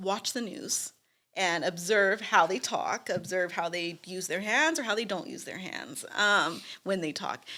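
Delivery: ordinary talk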